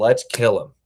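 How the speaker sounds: very serious tone. Retelling what a friend just out of prison said: imitating someone dead serious. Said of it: "he was so serious".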